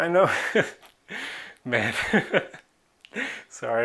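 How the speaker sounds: words spoken through laughter. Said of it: "I'm only laughing because".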